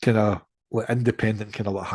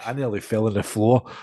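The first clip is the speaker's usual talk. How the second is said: normal talking voice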